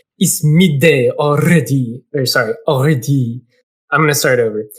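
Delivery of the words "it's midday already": put-on bird voice with French accent. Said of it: "He's gonna be French".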